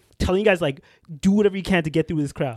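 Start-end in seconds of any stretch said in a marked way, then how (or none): none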